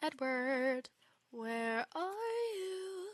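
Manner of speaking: eerie, slow, high, drawn-out calling out. Calling out for Edward while playing: creepy-sounding call. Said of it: "That sounded creepy".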